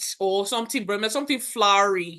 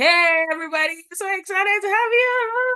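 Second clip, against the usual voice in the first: loud, very high, eager, excited voice; 11 semitones higher, 5 dB louder than usual. Speaker new to the school, retelling greeting the class: retelling a high-pitched greeting. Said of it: "I used my high pitched voice".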